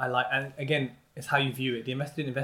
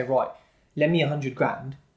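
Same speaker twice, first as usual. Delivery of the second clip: ordinary delivery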